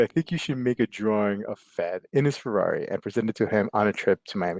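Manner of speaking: ordinary talk, nothing marked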